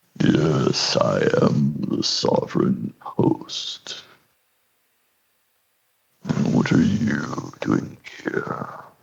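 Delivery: whispery, breathy, echoing, reverberating disembodied voice. Narrating a game, voicing the big Myconid speaking to both players: reverberating disembodied voice. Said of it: "you just hear this reverberating".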